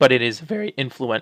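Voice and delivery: cracking voice. Talking through a list of old space movies, voice cracking. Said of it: "voice crack".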